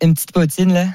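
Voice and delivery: Québécois accent. Asked by another speaker to do a Montreal accent: Québécois accent. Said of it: "Peut-être tenter un accent québécois".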